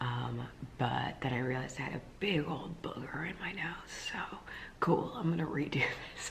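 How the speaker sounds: soft, quiet whisper. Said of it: "I'm talking quietly 'cause Joff's sleeping".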